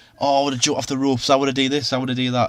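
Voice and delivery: ordinary talk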